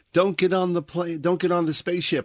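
put-on shouted yell, pitched way up. Retelling an ending where a man warns the boarding humans: imitating a man yelling. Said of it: "he yells out".

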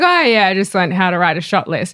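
put-on quick, breezy, offhand, blasé toss-off. Teasing a co-host for saying something so casually, mock-blasé. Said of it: "you just say it so blasé".

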